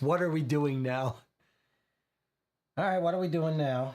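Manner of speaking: gravelly voice from the throat. A narrator voices the woman answering the telegraph office phone, gravelly voice. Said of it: "a gravelly voice. This is how she answers".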